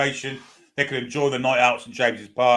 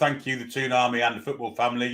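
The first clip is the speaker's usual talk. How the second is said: ordinary delivery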